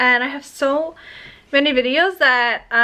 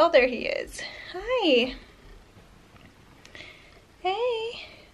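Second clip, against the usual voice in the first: soft, breathy, out-of-breath, winded murmur; 6 semitones higher, 8 dB quieter than usual. Greeting him after calling him over, out of breath. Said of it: "I'm out of breath".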